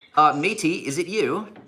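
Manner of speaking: put-on Australian accent drifting English. Greeting a caller from australia in an attempted australian accent. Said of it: "What's with the English accent".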